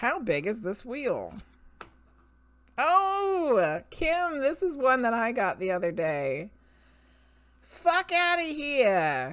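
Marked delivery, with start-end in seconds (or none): 7.6-9.3 high put-on New Jersey accent, drawn out. Reading today's mantra card aloud to listeners, New Jersey accent. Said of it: "You got to say it with a New Jersey accent".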